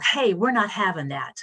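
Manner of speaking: play-acted mild, held-back yell. Retelling confronting a man hitting a woman on the metro: imitating own shout at top of lungs. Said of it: "at the top of my lungs now, I yelled".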